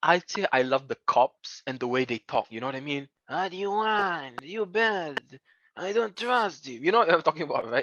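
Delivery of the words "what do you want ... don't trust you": slow, hoarse, raspy, slimy crooked-cop voice. Discussing a movie's characters and how its cops talk, imitating a hoarse, slimy cop voice. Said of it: "That kind of hoarse voice, that very slimy griminess".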